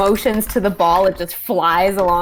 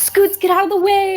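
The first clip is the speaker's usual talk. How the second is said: shrill, very high yell, acted in character; 13 semitones higher, 3 dB louder than usual. Drawing enemy fire in character, yelling to an ally: in-character yell. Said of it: "And I'm gonna yell".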